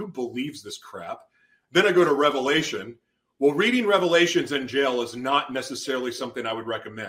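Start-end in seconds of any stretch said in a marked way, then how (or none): 0.0-1.2 mock scoffing laugh, much quieter. Speaker retells laughing at Genesis while reading it in jail, retelling a scoffing laugh. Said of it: "I'm just laughing at it going".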